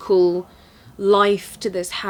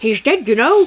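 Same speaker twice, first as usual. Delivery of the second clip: put-on high, raised, taunting old woman's voice; 6 semitones higher, 6 dB louder than usual. Quoting the old lady from the story about Mark, imitating an old lady. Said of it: "You could have played the old lady".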